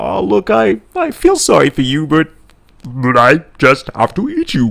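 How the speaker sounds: put-on slow, swooping alien voice. Imagining alien enslavers answering pleas for mercy: alien impersonation voice. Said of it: "That's me doing my alien impersonation".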